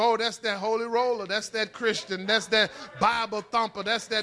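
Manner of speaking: normal talking voice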